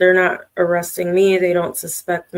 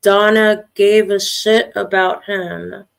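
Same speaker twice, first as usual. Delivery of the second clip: normal talking voice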